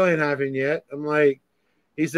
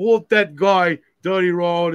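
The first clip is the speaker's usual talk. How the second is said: put-on whiny New York accent; 3 semitones higher than usual. Imitating a rival calling for help: imitating a whiny new york accent. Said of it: "in his fucking shitty, fucking whiny New York accent".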